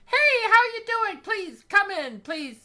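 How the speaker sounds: very high-pitched, loud, booming welcoming voice. Describing a woman welcoming someone in, high-pitched voice impression. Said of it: "she's got this this this high pitched voice".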